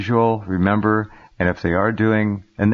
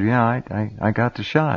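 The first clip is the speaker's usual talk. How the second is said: put-on sheepish tone, much slower. Retelling a story, the speaker quotes a friend's admission: mock-sheepish retelling. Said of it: "his friend kind of sheepishly said".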